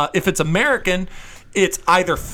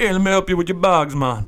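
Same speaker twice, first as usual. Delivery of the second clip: put-on Jamaican-accented speech. Retelling the guy at the airport shuttle offering help with bags, in a Jamaican accent impression. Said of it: "how many Jamaican impressions I'm doing".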